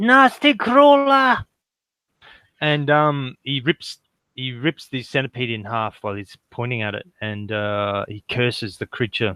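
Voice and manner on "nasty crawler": high, slow drawn-out outcry. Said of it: "he points and he goes".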